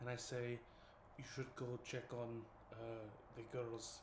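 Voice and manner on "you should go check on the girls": whispered, quieter. Speaking in character after walking up to someone: whispering in character. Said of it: "and I whisper to him".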